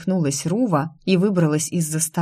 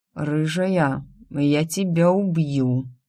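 muttered through teeth, barely parted lips. Narrator reads the young man's reply to the redhead, through barely parted lips. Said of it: "почти не разжимая губ, процедил парень".

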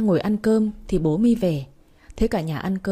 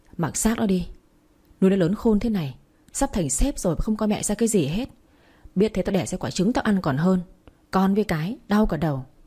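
ordinary delivery, nothing marked

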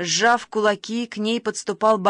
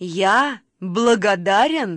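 exclaiming with a contemptuous, scornful laugh. The baron answers the baroness, exclaiming with a contemptuous laugh. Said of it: "презрительно смеясь воскликнул барон".

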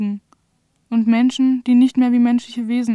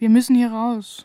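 ordinary delivery

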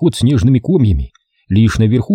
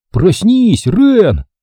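high, loud shouting; 8 semitones higher than usual. One character tries to wake a dreaming girl, shouting into her ear. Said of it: "закричал Турок ей в самое ухо".

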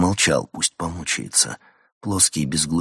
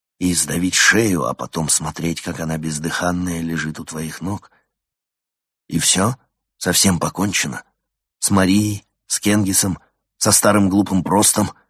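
plain

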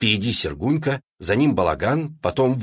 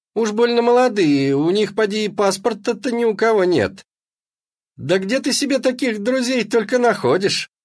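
very high, scornful, mocking, teasing jeer; 11 semitones higher, 4 dB louder than usual. Zoyka answers Sergunka as he places his order; mocking. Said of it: "насмешливо сказала Зойка".

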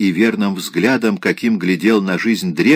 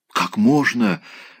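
frightened, fearful, alarmed. Leontiy, urged to destroy a letter, answers his friend, frightened. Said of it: "с испугом сказал Леонтий".

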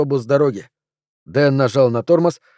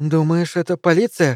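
voice shaking, trembling and quavering; 3 semitones higher than usual. A woman being chased by car asks her companion; trembling voice. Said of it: "спросила она дрожащим голосом".

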